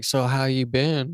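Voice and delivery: soft, weird little put-on whispery voice. Telling friends how he talked when he came in this time, imitating his weird little whisper. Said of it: "his weird little voice, like, he, like, whispers, basically".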